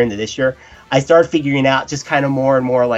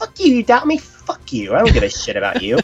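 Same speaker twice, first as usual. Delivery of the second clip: put-on high, swooping, defiant gangster tough talk; 6 semitones higher than usual. Acting out his own defiant reply to doubters: acting gangster-tough, put on. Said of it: "You're getting all gangster on me here".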